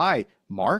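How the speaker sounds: rising, question-like pitch on "Mark". Imitating callers asking for someone, questioning rise on mark. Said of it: "they'll even ask with their tone".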